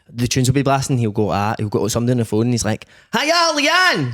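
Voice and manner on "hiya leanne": put-on over-the-top Scottish accent, very high pitched. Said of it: "that overly Scottish pure".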